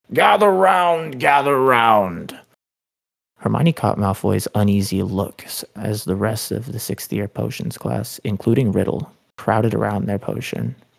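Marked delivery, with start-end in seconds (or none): 0.1-2.3 loud, high, stretched hollering. Slughorn turns to face the rest of the class: hollering. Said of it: "he hollered".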